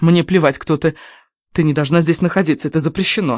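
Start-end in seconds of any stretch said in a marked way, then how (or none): none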